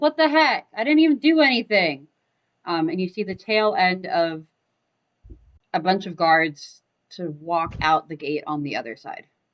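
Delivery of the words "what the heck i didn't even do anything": loud, high-pitched shouting. Voicing Idru, heard by the players but not seen, shouting. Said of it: "you hear Idru shouting, going like".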